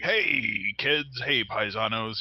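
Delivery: gruff voice, taken slowly. Remembering the Mario Super Show from childhood: gruff Mario impression. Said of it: "Mario was like a very gruff plumber".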